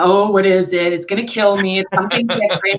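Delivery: mock-frightened horse voice, pretending to be scared. Retelling a horse acting afraid of a boat: mock-frightened horse voice. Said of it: "she acts like she's afraid of it".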